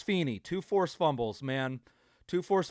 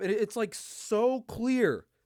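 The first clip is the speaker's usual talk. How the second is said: ordinary talk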